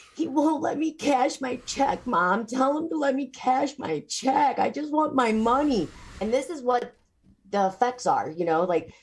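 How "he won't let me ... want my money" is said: tearful, crying, raised-pitch, slow pleading voice. Retelling a daughter's phone call asking to cash her check: imitating someone crying on the phone. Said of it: "She's crying".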